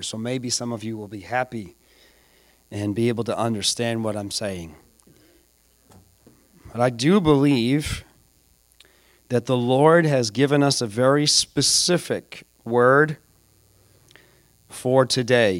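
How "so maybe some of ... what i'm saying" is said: a little bit quieter, softer and slower. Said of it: "I'm gonna talk a little bit quieter, a little bit slower".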